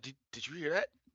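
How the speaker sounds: sudden, paranoid, uneasy delivery. A storyteller acts out a character who suddenly turns to listen: paranoid. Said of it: "she looks around like paranoid".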